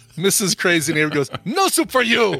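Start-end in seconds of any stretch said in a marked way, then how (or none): 1.5-2.4 high, full-throated shout at the top of the lungs. Retelling how a neighbor yelled at a server, retelling a shout. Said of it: "at the top of her lungs".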